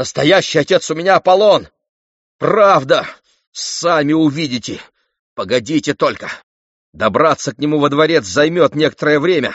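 high-pitched, yelled hollering. A boy, taunted by other boys about his father, yelling back. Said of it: "завопил в ответ Фаэтон".

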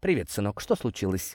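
ordinary delivery

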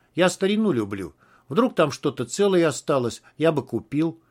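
ordinary delivery

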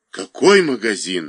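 frightened, fearful voice. Told he robbed his own shop, the accused man asks: frightened question. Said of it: "испуганно спросил Усков".

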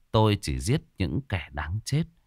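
ordinary delivery, nothing marked

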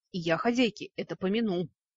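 ordinary delivery

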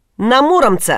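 emphatic, firmly stamped-down, pressed-down words. Narrator reads the robber answering Ilya's question, said emphatically as if stamping. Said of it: "сказал, как припечатал".

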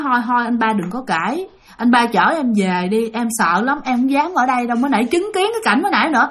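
ordinary delivery

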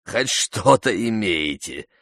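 scornful, scoffing, mocking and derisive tone. Narrator reads Zukhursho answering the Rais's report: mocking. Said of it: "насмешливо произнес Зухуршо".

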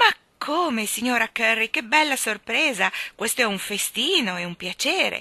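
loud, delighted, joyful cry. Mary Poppins receives a gift from Mrs Curry, joyful cry. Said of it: "Mary Poppins gridò di gioia".

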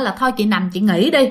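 ordinary talk, nothing marked

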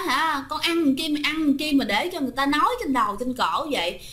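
plain

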